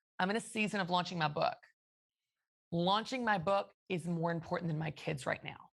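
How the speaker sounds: hard, direct, aggressive, blunt delivery. Giving an example on purpose to rattle people, aggressive and direct. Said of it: "I'm going to say it aggressive deliberately".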